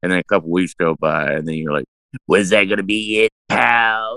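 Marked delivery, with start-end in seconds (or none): 2.3-4.2 eerie, creepy voice, in character. Imitating an actor from a bad movie, quoting his line: imitating the actor's creepy voice. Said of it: "do an impersonation of this guy".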